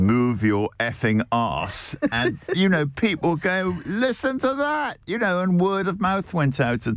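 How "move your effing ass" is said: robotic, digital, computerised machine-like voice. Recounting what a restaurant robot said to people, in a robotic digital voice. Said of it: "digital voice".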